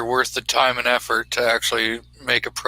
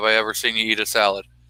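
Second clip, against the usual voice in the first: ordinary delivery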